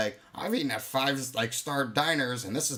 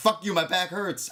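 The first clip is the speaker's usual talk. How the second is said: mock furious, high, angry yelling; 7 semitones higher than usual. Retelling a workout video that ran too long: retelling yelling at the TV. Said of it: "And I'm yelling at my T V".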